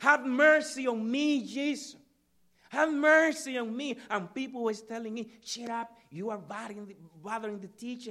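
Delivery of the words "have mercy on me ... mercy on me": loud, high-pitched scream, repeated crying out. Retelling how a man begged jesus for mercy, imitating someone screaming. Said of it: "he started screaming".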